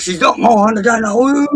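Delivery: put-on upset voice. Retelling how a friend kept getting upset when teased about a girlfriend: imitating someone getting upset. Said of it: "he kept getting upset".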